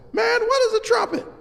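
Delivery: very high, squeaky, piping voice. Retelling a professor asking students what a trumpet is: high voice imitating Bill Fielder. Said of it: "He had a high voice".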